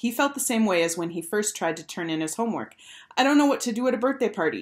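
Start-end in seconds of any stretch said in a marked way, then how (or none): 3.2-3.9 shivering, quivering, trembling voice, pitched up. Bradley answers his best friend Jeff while sitting on the curb, shivering. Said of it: "he said, shivering".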